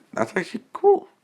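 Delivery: very high, cracking, breaking voice. Narrating what people in a scene are saying, voice cracking. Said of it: "Sorry, my voice cracked".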